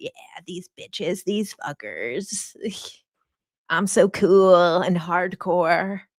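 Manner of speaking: mock rebellious teenager voice. Writing a journal entry in their old teen voice, put-on cocky teen voice. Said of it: "do, like, some journaling in my teen voice, I'm gonna be like".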